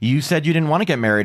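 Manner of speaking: ordinary talk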